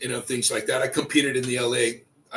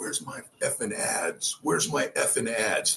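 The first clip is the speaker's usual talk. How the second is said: mock slow, breathy, seething angry whisper; 2 semitones lower, 6 dB quieter than usual. Retelling how a man stormed in demanding his ads: imitating angry Pete Gromkowski. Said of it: "he was pissed".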